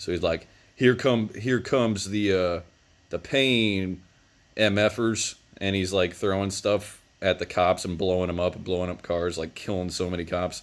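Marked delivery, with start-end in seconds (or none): none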